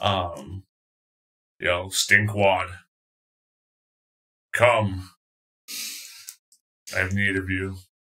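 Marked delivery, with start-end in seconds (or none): 1.9-7.8 big, much louder booming voice. Voicing a caller summoning stinkwad: much louder voice. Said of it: "you hear a much louder, much louder voice".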